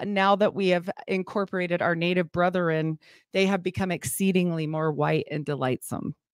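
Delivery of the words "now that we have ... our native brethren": ordinary delivery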